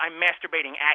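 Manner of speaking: acted-out cross, angry voice. Retelling a woman's answer when her partner asks what she's doing: mock-angry voice. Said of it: "she says in an angry voice".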